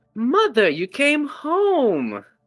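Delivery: beaming, smiling tone. Narrating a character who opens the door and greets her mother, big smiling greeting. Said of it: "a very large smile comes across her face".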